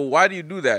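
ordinary talk

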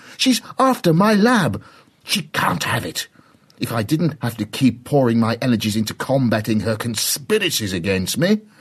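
worked-up, agitated ranting. Narrator reads a professor's heated reply to Rosie during a discussion, agitated. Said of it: "rolling his hands in an agitated dumb show".

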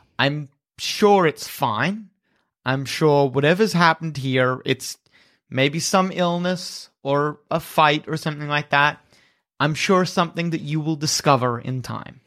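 mock-sympathetic, condescending tone with dripping sarcasm. Game master voicing Armand, who seems apologetic to the players, dripping sarcasm and condescension. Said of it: "his voice is kind of like drooling with sarcasm and condescension".

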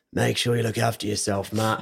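put-on deep, raspy voice. Retelling how he would respond when checking in, imitating his deep, raspy voice. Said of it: "in his deep, raspy voice".

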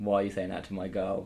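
plain

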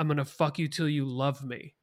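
put-on tearful voice, choked in the throat. Retell what a boxer said at a public weigh-in, imitating tears in the throat. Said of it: "You could hear him like tears in his in his throat".

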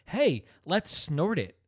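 mock, drawn-out, high, swooping called-out delivery. Retelling what one guy said while hanging out: imitating someone shouting. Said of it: "one guy just shouts out".

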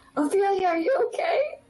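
put-on shrill yell, very high, voice cracking. Calling into a jail cell in character: in-character yell. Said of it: "She's gonna just yell in there".

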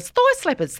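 put-on very high-pitched New Zealand accent, TV style. Recalling a new zealand woman on a tv show: new zealand accent. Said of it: "that's where I get my New Zealand accent from".

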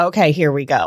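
usual speaking voice

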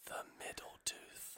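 slow, soft ASMR-style whisper. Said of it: "Please don't do A S M R in that microphone".

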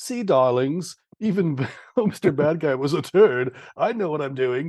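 put-on English accent. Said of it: "That's my impression".

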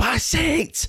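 very high, screamed yell. Retelling shouting from the stand for a player to pass: retelling a scream. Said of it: "I'm just screaming".

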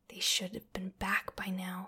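hissed. A woman waiting over an hour for raiders to return, hissing. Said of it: "hissed Tanya".

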